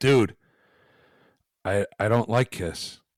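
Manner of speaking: ordinary talk, nothing marked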